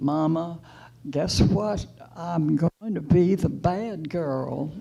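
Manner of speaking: put-on home-grown southern accent slipping in. Retelling a phone call to her mother with big news, in a southern accent. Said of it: "I always get a southern accent back when I talk to my mother".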